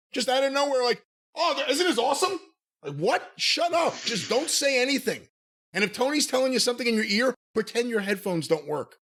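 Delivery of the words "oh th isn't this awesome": sudden, blurted, pitched-up mocking commentator voice. Imitating the commentator's random non sequitur: mocking Schiavone impression. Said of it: "Schiavone just pipes in with, like, a non sequitur".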